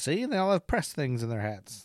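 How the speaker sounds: put-on classic old-timey newsman reporter voice. Speaker mocks how the journalists who flocked to the town talked; mock journalist voice. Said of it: "They all talk like this".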